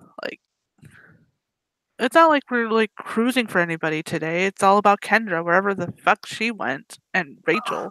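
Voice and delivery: normal talking voice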